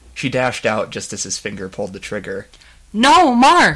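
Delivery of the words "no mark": crying out, pitched way up. A narrator voices a woman dashing out as the trigger is pulled, cried out. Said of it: "She cried".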